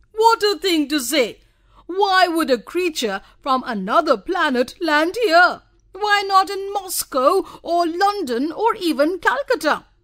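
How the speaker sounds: loud, laughing through the words. At tea, a man answers another man's suggestion, laughing loudly. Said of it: "laughed loudly and said".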